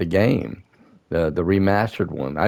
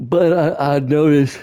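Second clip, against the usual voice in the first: pitched-up words spoken through a yawn; 7 semitones higher, 4 dB louder than usual. Speaker talking about the games they bought: yawning. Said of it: "I'm yawning".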